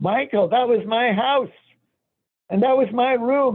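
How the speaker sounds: very high, put-on screamed-out delivery. Retelling stopping in front of the old house: retelling own scream. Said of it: "And I screamed".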